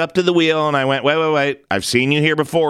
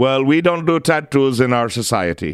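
fake put-on Indian accent. Retelling what a girl's mom said about tattoos, imitating her in a put-on Indian accent. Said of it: "That's probably not the right accent. That was more Indian".

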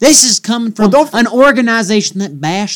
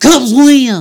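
put-on announcer voice, higher and louder; 4 semitones higher, 5 dB louder than usual. Calling a hockey team's win as a joke: Harry Caray voice. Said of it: "you're going Harry Carey now?".

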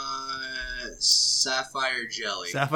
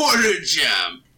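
put-on Japanese accent; 6 dB louder than usual. Saying a quiz answer the way the other speaker describes it: imitating a Japanese accent. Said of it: "It's like a Japanese guy saying pearl".

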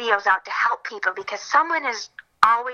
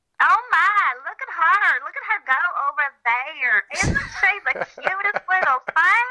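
very high, southern-accented squirrel critter voice; 9 semitones higher than usual. Describing a voice audition to play a squirrel, doing a southern squirrel voice. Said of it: "A southern squirrel".

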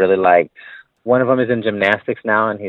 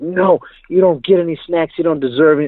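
scolding, high-pitched yelling; 8 semitones higher than usual. Speaker re-enacts yelling at a kid in front of everybody after a game, retelling a scolding yell. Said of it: "I'm yelling at him in front of everybody".

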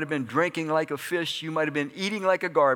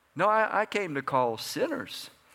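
usual speaking voice

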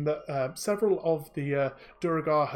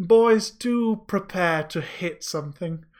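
put-on slow, raised-pitch elderly dwarven woman voice; 3 semitones higher, 5 dB louder than usual. Voicing an elderly dwarven woman questioning intruders at dinner: voicing an elderly dwarven woman. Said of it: "And she gestures to the other three".

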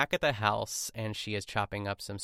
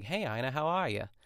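put-on thick New England accent; 3 semitones higher than usual. Describing a friendly over-the-counter worker's greeting, imitating Asa's New England accent. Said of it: "He's got like a real thick New England accent".

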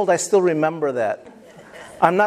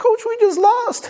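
crying, very high and tearful. Retelling answering the coach after a lost game, retelling own crying. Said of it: "And I'm crying like".

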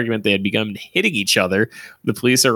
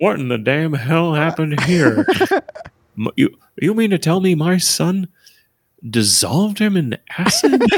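put-on cartoon dad voice, much higher; 6 semitones higher than usual. Someone they are talking about sounds like King of the Hill, so do a Hank from King of the Hill impression. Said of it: "get into that impression".

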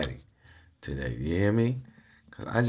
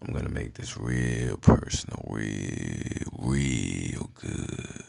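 voice lowered, much lower; 8 semitones lower than usual. Speaker addressing the listener at the start of a talk, lowered voice. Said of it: "I'm going to be lowering my voice down for you".

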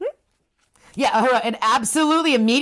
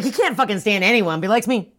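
ordinary delivery

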